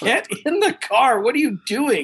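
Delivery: acted yelling. Retelling yelling from the back seat of the car: imitating own past yelling. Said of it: "I started yelling from the back seat".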